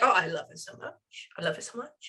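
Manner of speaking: put-on dog's voice with an English accent. Voicing what a dog says to the speaker: english accent. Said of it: "he has an English accent in my head".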